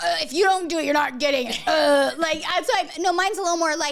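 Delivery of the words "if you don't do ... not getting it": mocking, mean put-on voice.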